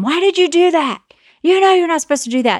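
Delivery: high-pitched, scolding yell. Describing parents seen while people-watching, imitating a parent yelling at a kid. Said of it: "yanks the kid and yells at them".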